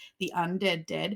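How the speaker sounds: plain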